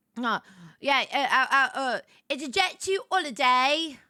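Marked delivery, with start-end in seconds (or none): 2.3-3.9 fake British accent, higher. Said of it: "So we're gonna do".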